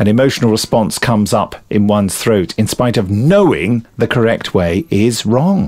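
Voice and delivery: ordinary talk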